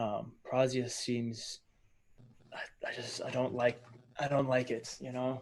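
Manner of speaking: put-on whispering. Retelling what a man leaned over and said; imitating a whisper. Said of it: "leans over and whispers".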